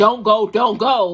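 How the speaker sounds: loud, drawn-out, desperate yelling. Recapping a show episode, retelling how the speaker yelled at the tv. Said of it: "I'm yelling at the TV".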